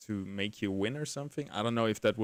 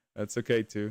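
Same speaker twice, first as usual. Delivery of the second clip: sounding let down, dejected, disappointed. Responding to another player's plan to keep a prize, sounding disappointed. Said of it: "You sounded so disappointed".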